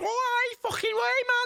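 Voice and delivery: very high-pitched, drawn-out modern Scouse accent. Showing two accent options, the speaker starts with the high-pitched modern Scouse accent. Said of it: "start off with the high pitched".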